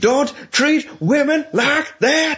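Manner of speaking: high, slow, thick Alabama drawl.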